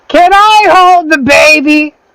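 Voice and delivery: put-on baby said very high, slow and drawn out. Voicing Razzmatazz after the others mock the voice: Razzmatazz character voice. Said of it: "You think we're gonna like you with that voice?".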